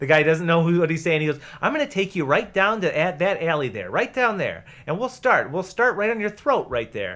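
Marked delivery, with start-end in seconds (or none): 1.6-7.2 acted-out pleasant, friendly-sounding, swooping menace. Reading a movie cop's threat to a suspect aloud: imitating a smiling threat. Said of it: "doing it with a smile".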